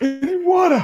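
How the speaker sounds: high, dry thirsty-sounding voice. A game character coming out of the abyss asks the group, in a parched voice. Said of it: "that's the way I sound coming out of the abyss".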